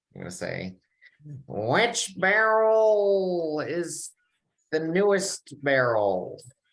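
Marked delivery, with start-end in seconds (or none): 1.5-6.5 high, slow, deliberate goblin god voice. A player in a tabletop game speaks in character to the kids, in a Goblin God voice. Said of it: "in my best Goblin God voice".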